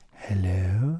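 posh, polished put-on telephone voice. Retelling how a friend's mother answered the phone: imitating a posh telephone voice. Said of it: "her telephone voice was like".

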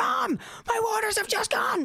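blurted, very high, panicked cry.

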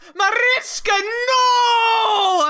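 acted very high, shrill all-out shout, long "no". Recounting a scene as Dracula lurches out of his coffin, retelling Dracula's shout. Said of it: "he shouts".

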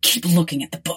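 hissed, urgent, pressing tone. Narrating one character warning another, with an urgent hiss. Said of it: "he hissed urgently".

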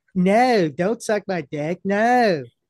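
weak, wimpy put-on Southern accent. Mocking Southern people from around South Carolina, wimpy Southern voice. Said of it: "that's just like a pussy Southern voice".

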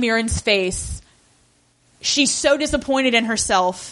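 ordinary delivery

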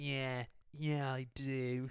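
odd, very slow goblin voice. Repeating own earlier line after being teased: imitating own weird goblin voice. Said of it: "'cause I was just like".

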